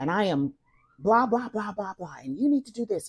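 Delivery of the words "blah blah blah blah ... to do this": mock raging, ranting, screaming scolding tone. Retelling a dream of disciplining a son: imitating own past screaming. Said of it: "and I'm screaming".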